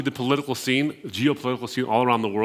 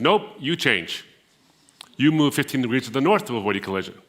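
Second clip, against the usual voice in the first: mock casual, very informal, offhand delivery. Retelling a story of a radio reply to a ship: imitating a very informal reply. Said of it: "the response is in a very informal way".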